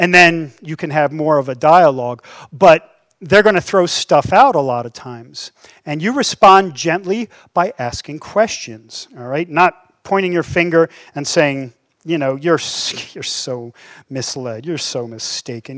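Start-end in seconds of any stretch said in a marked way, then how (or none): 12.4-15.8 low, slow, patronizing condescension. Speaker demonstrating how not to respond to someone in a dialogue, condescending tone. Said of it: "You hear the condescension in my voice".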